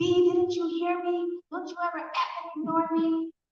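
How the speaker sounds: yelled furiously. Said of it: "he's hitting her and yelling at her".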